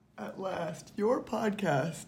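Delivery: soft, slow mumble through a yawn. Caught as the recording is switched on, yawning and mumbling. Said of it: "Are you yawning and mumbling".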